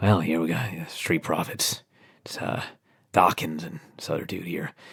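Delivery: barely-there, very quiet, near-whispered murmur. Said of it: "he just quietly says".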